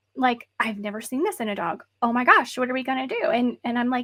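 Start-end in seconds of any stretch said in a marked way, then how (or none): 0.6-3.2 imitated panicked, frantic manner. Retelling her reaction to the dog's rare thyroid levels: imitating someone frantic. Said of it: "she was frantic".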